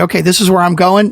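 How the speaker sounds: ordinary delivery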